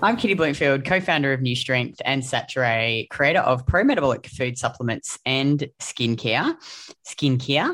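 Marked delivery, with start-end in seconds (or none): 7.1-7.7 playful put-on South African accent. Reading out a product list, then saying one word in a south african accent. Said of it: "Got the Kiwi accent today".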